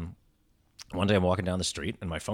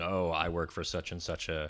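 ordinary talk

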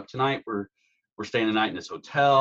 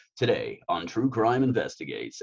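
put-on deep radio announcer voice. Speaker demonstrates the voice used for voiceover work: deep radio announcer voice. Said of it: "I can turn on the voice".

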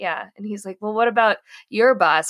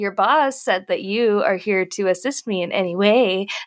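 ordinary delivery

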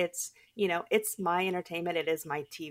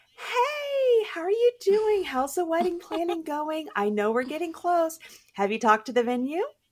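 put-on phony voice, very high and raised; 11 semitones higher, 6 dB louder than usual. Calling a woman about her wedding planning, super fake voice. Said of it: "I did have like the super fake voice".

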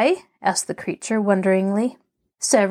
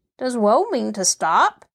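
astonished, surprised tone. Narrator reading the sawhorse's question to the boy Tip, surprised. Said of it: "asked the sawhorse in a surprised voice".

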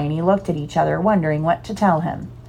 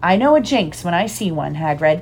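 ordinary delivery, nothing marked

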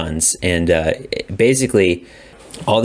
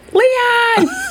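mock yelling, higher; 4 dB louder than usual. Retelling a joke a younger brother always made: imitating someone yelling. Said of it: "He would always just yell".

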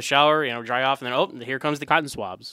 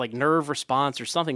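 ordinary talk

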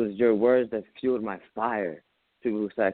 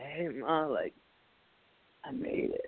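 hushed, whispered, slow, breathy put-on crying; 5 semitones higher, 9 dB quieter than usual. Retelling calling mom with big news: retelling own crying call. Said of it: "I called Mom crying".

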